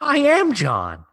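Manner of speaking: very high-pitched, eager and thrilled excited burst. Repeating the intro line after being asked to sound more excited. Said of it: "Sound a little more excited".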